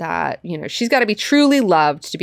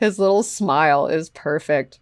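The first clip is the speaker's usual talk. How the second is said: ordinary talk, nothing marked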